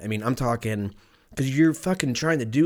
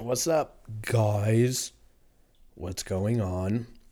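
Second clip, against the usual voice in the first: sick-sounding voice, changed by illness. Greeting viewers at the start of an episode while sick: sick voice. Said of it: "My voice sounds really cool 'cause I'm sick".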